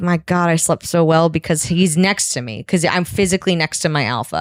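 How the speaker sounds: plain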